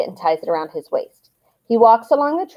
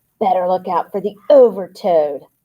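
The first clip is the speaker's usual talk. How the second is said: dark, sinister, menacing hushed whisper. Catching up with Ryan on the way back to class, [name] speaks in a dark, sinister whisper. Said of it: "whispers in the dark, sinister voice".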